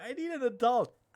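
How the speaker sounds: put-on very loud, high, childlike little-kid voice. Joking about another player's reaction: imitating a small kid. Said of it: "like a small kid going".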